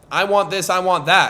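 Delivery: normal talking voice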